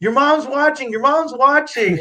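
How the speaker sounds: high-pitched, excited yelling.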